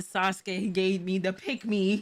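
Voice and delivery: ordinary talk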